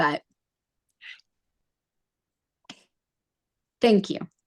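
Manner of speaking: voice held together against tears. Leaving a meeting early and thanking everyone: holding back tears. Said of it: "I'm gonna try not to cry".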